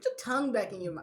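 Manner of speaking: plain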